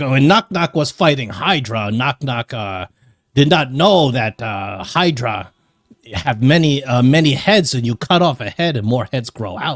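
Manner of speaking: wild, half-feral goblin character voice. Voicing a semi-feral goblin who brags about fighting a Hydra: semi-feral goblin voice. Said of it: "he's like".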